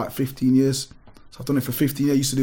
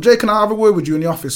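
put-on very old-school Irish accent, pitched-up; 7 semitones higher, 6 dB louder than usual. Retelling how a woman came up just before class started, do Auntie V, very old school Irish. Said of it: "very old school Irish".

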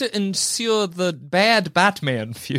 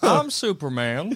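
put-on southern drawl. Answering a mock interview question: imitating the Superman voice. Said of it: "let's talk about that voice".

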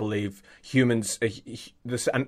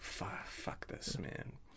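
put-on mutter under the breath, much quieter; 20 dB quieter than usual. Acting out what someone mutters after telling a weak joke, imitated under-breath mutter. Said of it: "You could sort of hear him under his breath going".

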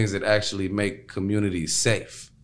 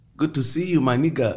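bad put-on Ghanaian pidgin English accent; 5 semitones higher than usual. Describing how people in Ghana say it, in a terrible Ghanaian pidgin accent. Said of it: "that's a terrible accent".

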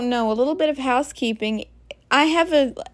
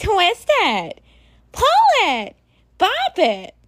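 put-on snotty toy voice, much higher, slower; 7 semitones higher than usual. Mocking a toy's voice heard on YouTube, imitating a snotty toy voice. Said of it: "It just sounds so snotty when it talks".

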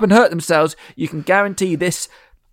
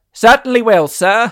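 put-on old-time radio announcer voice; 6 semitones higher, 4 dB louder than usual. Speaker retelling the director's reply to a complaining man, in 1930s radio announcer voice. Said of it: "in his beautiful 1930s radio announcer voice".

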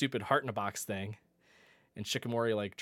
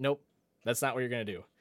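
usual speaking voice

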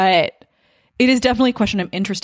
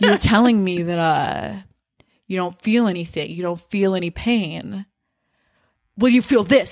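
theatrical, grandstanding, played big for stage. Retelling a monologue delivered before a confrontation: theatrical Sandoval imitation. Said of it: "to make it, like, theatrical".

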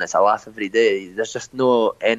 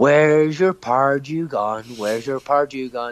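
acted-out, held-back screaming in a man's voice; 4 semitones higher than usual. Retelling what a man beside his wife screamed at a game: imitating a man screaming. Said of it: "for ninety minutes he just screamed".

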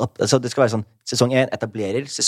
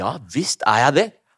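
mock angry, emphatic, pissed-off tone. Speaker retells his answer to a journalist on the phone, retelling an angry reply. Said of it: "jeg er litt sånn forbannet".

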